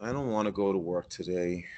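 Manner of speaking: hushed, very soft, dejected and depressed voice. Demonstrating example tones one by one, in a depressed tone.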